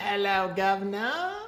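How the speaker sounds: very high, bad put-on British accent. Host opening Thoughts That Rock, greeting the show's guest in a bad British accent. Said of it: "Were you doing a British accent because of our guest?".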